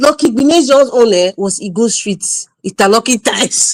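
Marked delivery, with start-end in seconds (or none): 2.7-3.7 words broken up by laughing while talking. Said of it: "I'm sorry I'm laughing".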